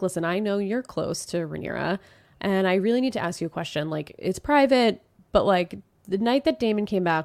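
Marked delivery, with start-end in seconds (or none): none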